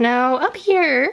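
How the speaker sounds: voice leaping up high suddenly and unexpectedly. Moving on to the big book section of the shelf: voice suddenly going really high. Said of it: "my voice just went really high".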